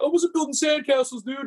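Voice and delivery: mock upset objecting tone, pitched very high. Retelling a golfer's reply to the criticism: imitating someone upset. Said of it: "he got real upset 'cause he's like".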